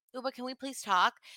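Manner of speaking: put-on polite, nice tone. Showing how the request should have sounded: imitating a nice request. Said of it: "so say it nice".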